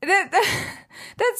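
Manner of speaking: giggling while speaking. Reacting to the other speaker's answer, giggling while talking. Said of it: "I'm sorry I'm giggling".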